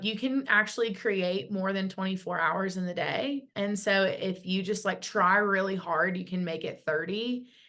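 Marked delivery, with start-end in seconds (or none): none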